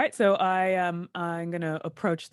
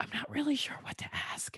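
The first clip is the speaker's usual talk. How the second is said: very quiet, breathy whisper; 9 semitones higher, 10 dB quieter than usual. An aside to another player mid-scene, whispering. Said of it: "I whisper to you".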